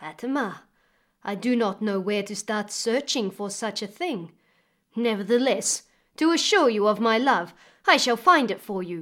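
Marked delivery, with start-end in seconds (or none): none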